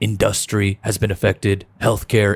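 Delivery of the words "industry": industry said in-dus-try, dus leaned on. Quoting a man talking about the economy; stress on second syllable of industry. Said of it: "he emphasizes industry. The dust, ... he's like this, he just goes".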